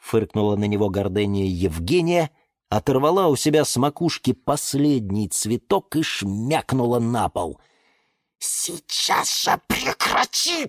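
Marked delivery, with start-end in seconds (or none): 8.4-10.7 sharply hissed delivery. Reading a tale, he orders the misbehaving plant to stop: hissing. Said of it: "Зашипел на нее Лимон Филимон".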